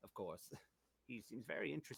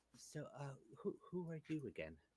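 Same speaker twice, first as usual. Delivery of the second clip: small, high little voice; 7 semitones higher than usual. Voicing Clara, who steps up to a player at a party: Clara's small voice. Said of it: "there's a small voice at your side".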